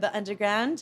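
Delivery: poor put-on British accent. Chatting about getting around London, naming the tube, in a bad British accent attempt. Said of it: "that was my attempt at a British accent".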